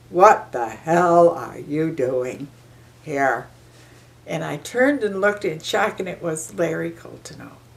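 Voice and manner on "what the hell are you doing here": deep, big, loud, booming voice, drawn out. Retelling a man confronting the speaker on arrival, in Larry Coltoneau's booming voice. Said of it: "big, loud, booming voice that says".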